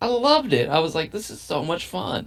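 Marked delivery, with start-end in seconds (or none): 1.1-2.3 heavily sarcastic tone, meaning the opposite. Retelling own past reaction to a frustrating game moment: sarcastic, retelling own words. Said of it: "if you can't tell I'm being sarcastic".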